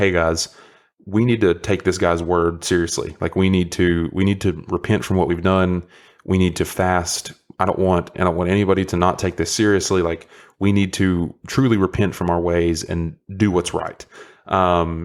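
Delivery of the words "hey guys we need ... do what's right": usual speaking voice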